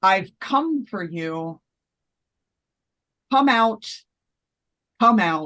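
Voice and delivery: sounding really upset. Voicing a figure calling someone out of their house: sounding really upset. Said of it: "she sounds real upset".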